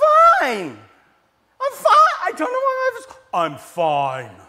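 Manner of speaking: very high, loud squeaky voice with stretched vowels. Retelling a scene where friends ask Ross if he's okay: high squeaky Ross voice. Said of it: "his voice gets real high and squeaky".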